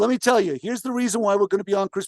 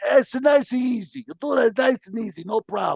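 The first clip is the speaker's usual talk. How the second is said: smoky, whiskey-and-cigarette-worn voice; 3 semitones higher than usual. Retelling what a grandmother said about the tree: imitating grandmother's smoky voice. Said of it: "She had that voice as well".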